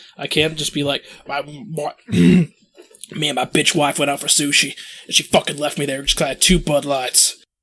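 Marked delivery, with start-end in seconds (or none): 1.3-7.4 forced put-on voice, pushed hard and straining throat. Showing the others the throat-straining voice: Alex Jones voice. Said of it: "it hurts my throat so much to do that voice".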